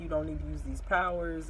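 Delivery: ordinary delivery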